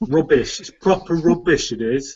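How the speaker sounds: clumsy, bad put-on British accent. Joining a discussion about a film remake, bad British accent. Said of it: "why I was trying to do a British accent then".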